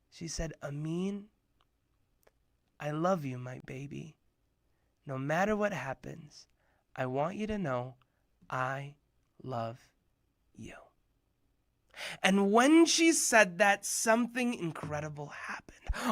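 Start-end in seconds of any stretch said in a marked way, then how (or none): 0.6-10.7 gentle, soft, soothing motherly voice. Replaying his mom's phone message to him, imitating mom's soothing voice. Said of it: "my mom in her soothing voice".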